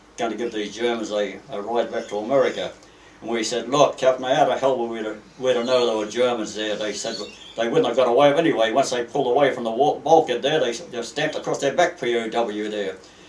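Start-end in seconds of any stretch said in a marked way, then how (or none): none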